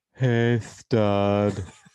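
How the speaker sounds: loud, lisping male ghost voice with "stud" drawn out. Telling a ghost story, voicing a ghost heard as someone walks out, with a lisp. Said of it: "with a lisp and all".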